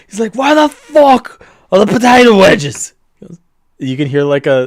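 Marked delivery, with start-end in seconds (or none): 0.3-2.9 very loud, very high, shrill screaming rage. Voicing a character who kicks in the chef's door: furious yell. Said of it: "he kicks it in very furiously".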